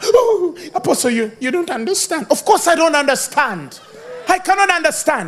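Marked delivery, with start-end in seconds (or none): 0.0-2.3 mock crying, sobbing, tearful. Imitating a crying person answering the Apostle: imitating someone crying. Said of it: "Why are you crying?".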